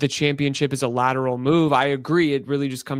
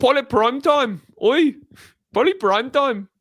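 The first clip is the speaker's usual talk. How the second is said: bad put-on Welsh accent, higher and louder; 12 semitones higher, 4 dB louder than usual. Imitating the town's people calling out to a player: bad Welsh accent. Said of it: "Is that your Welsh or your Scot-".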